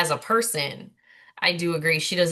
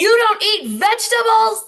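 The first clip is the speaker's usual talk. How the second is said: shrill, very high, drawn-out scolding scream; 8 dB louder than usual. Retelling an argument from a show: imitating Shannon yelling. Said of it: "She yelled at him about the vegetables".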